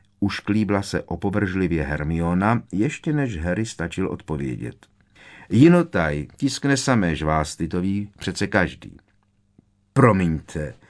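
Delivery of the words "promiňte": dreamy tone suddenly gone. Lenka answers Hermione after her remark about the magazine, dreamy tone suddenly gone. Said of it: "zasněný tón se náhle z jejího hlasu vytratil".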